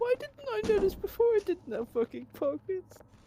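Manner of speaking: tearful, upset voice. Streamer laments to chat that her pajamas have no pockets: crying. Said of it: "Are you crying?".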